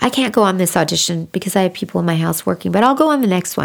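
usual speaking voice

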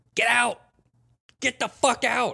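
shrill, raspy, full-volume screaming roar. Retelling a buddy jumping down the stairs at a party, retelling a scream. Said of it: "started screaming".

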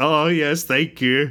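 put-on, very slow, high, tearful and overcome. Retelling meeting a childhood hero, imitating own tearful excited voice. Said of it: "crying 'cause I was so excited to meet her".

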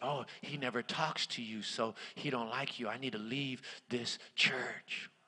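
slow, drawn-out, gossipy whisper. Acting out church gossip about the speaker: imitating gossip whispering. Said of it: "They're gonna whisper and say".

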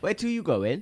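put-on Welsh accent. Trying the accent again after a first attempt: Welsh accent. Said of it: "So you did the accent. ... that was better".

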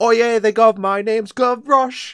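exaggerated Cockney child voice. Mocking the little kid character in a recording: hard-stereotype Gavroche voice. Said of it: "like hard stereotype".

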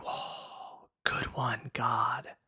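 very slow, drawn-out, breathy, hushed whisper. Speaker retells a friend's reaction at a body exhibit, imitating a friend's whisper. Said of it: "starts whispering".

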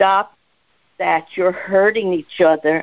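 ordinary talk

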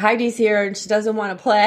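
plain

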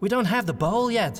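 very high voice with a touch of panic. Narrator reading Federhel's line after the flower stem is slashed: slightly panicky. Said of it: "said in a slightly panicky voice".

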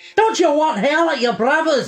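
put-on very high, loud, scolding Scottish accent. Attempting an Irish accent that others call Scottish, accidental Scottish accent. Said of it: "That's Scottish".

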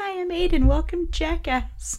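put-on tiny little-kid voice, very high pitched. Telling about a home video, the speaker quotes Aiden, tiny voice imitating Aiden. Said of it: "tiny voice of course he said".

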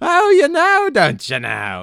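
very high, loud, swooping, drawn-out comic voice. Reading out a message about a host's impressions: Ed Wynn impression. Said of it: "that impersonation sounded so familiar".

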